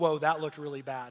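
ordinary delivery

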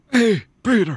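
put-on very high, loud, breathless, puffing old man voice. Reading a comic aloud in roles, voicing the Vulture: out-of-breath old-man Vulture voice. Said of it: "I just sound like weird, out of breath Joe Biden".

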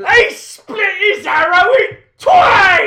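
very high, very loud, shrill shriek. Urged by another speaker to let the yell out, yelling. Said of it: "You were gonna yell, do it".

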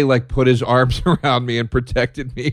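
breathy laughter through the words.

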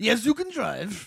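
Middle Eastern accented speech. Mocking a rule about women driving, the speaker does a Middle Eastern accent impression. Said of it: "That's my Middle Eastern impression".

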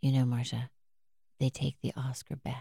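low, quiet murmur. Speaker retelling what a co-star said after a scene, quietly quoting Brad. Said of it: "quietly after we did a scene".

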